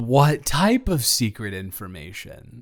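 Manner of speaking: sarcastic put-on curiosity with swooping, fake-interested tone. Pretending to be interested, but in a sarcastic way: sarcastic feigned interest. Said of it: "this is me pretending that I I I I'm interested, but in a sarcastic way".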